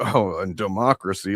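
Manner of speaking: scornful, derisive, dismissive mocking tone. Speaker acts out a man reading a platform aloud, imitating someone mocking. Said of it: "like rolling his eyes at the idea".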